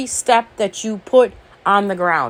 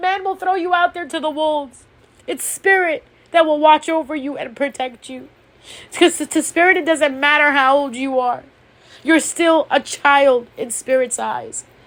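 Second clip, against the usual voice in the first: heartfelt, moved, emotional preaching delivery; 4 semitones higher than usual. A speaker delivering a spiritual message gets emotional: emotional. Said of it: "it's been such a long time since I got this emotional".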